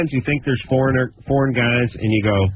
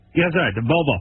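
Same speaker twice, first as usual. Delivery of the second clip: put-on thick Spanish accent; 3 semitones higher than usual. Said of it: "He has a very thick accent".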